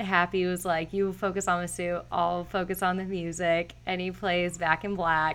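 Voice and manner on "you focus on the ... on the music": ordinary talk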